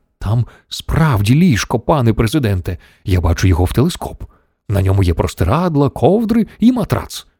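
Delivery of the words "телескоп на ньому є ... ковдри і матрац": ordinary delivery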